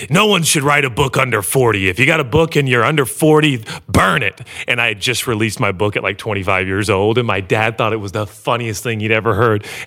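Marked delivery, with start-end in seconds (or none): 0.1-4.4 raspy, rough-voiced preacher voice. Retelling what a preacher said at his dad's church, in a raspy voice. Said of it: "he had a real kind of raspy voice".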